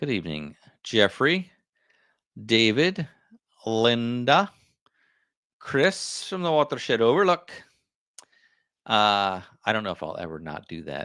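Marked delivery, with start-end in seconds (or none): 5.6-7.5 put-on Scottish accent, slightly higher pitch. Reading out commenters' names, the speaker says one in a Scottish accent. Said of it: "comes out in my Scottish accent".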